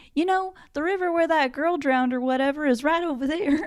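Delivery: put-on country Maryland accent. Retelling what fishermen told the filmmakers: imitating a Maryland accent. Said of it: "I like your Maryland accent".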